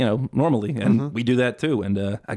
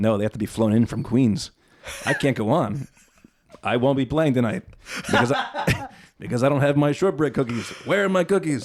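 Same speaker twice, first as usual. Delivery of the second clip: dead-serious, straight-faced delivery, played totally straight. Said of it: "straight-faced, dead serious".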